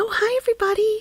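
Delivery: very high, fake-friendly, fake-nice voice. Imitating someone who enters the channel: imitating a fake friendly greeting. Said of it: "fake the funk".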